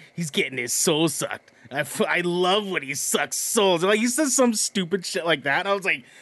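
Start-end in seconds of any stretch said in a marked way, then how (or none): 0.2-1.5 put-on New Jersey accent. Quoting the Jersey accent guy from the game, Cabal's Jersey accent. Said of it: "Cabal was the Jersey accent guy. Where he's like".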